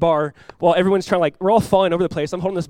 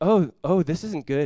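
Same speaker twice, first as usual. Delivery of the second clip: calm, slow, unhurried and composed; 4 dB quieter than usual. Retelling a storm at sea, imitating a friend speaking calmly. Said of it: "He said it so calmly".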